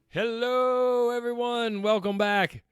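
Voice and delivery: rough, hoarse, very high-pitched voice. Greeting listeners while fighting off a cold: rough voice from a cold. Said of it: "That sounded kind of rough".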